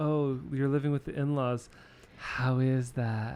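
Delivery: mock sympathetic, pitying tone. Imitating people asking about living with the in-laws: imitating a pitying tone. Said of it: ""Oh, I feel so sorry for you" tone of voice".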